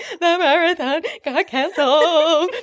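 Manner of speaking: put-on sobbing, drawn-out, high ugly crying, blubbering. Retelling answering an owner who walked into the break room, imitating ugly crying. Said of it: "I'm just there ugly crying like".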